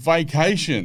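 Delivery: high, called-out voice. Retelling trying to explain himself to police while on the ground, retelling a yell.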